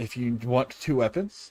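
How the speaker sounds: ordinary delivery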